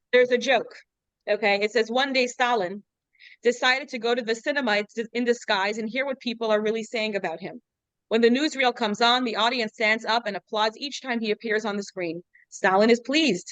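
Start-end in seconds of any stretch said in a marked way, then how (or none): none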